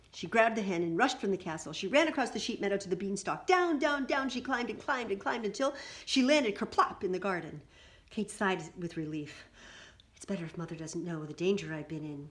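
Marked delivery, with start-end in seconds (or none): 10.1-12.3 hushed whisper. A narrator reads Kate's words to the hen: whispering. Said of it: "she whispered to the hen".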